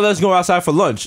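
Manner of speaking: usual speaking voice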